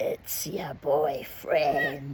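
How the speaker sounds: low, gravelly, suggestive, lascivious voice. Retelling a friend's phone calls, imitating Joe's gravelly lascivious voice. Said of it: "in this really like gravelly but almost lascivious voice".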